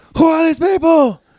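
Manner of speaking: shrill, very loud, uncontrolled high-pitched yell. Reading a script aloud as Austin, just unfrozen: shouting in character. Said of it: "The shouting is a temporary side effect".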